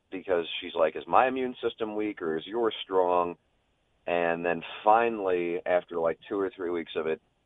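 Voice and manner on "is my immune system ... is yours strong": ordinary delivery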